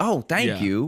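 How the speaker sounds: mock cheery upbeat tone. Retelling their own reply to a store worker: imitating own upbeat reply.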